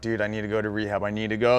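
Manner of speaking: play-acted tearful, crying, pleading voice. Retelling begging to go to rehab after jail: retelling own crying plea. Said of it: "I was crying, like".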